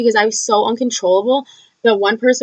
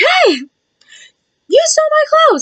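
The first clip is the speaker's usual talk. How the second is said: mock drunken scream, very high, wild, swooping, accusing; 4 dB louder than usual. Retelling a drunk night, speaker reenacts screaming down at strangers: retelling a scream. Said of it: "screaming down to strangers".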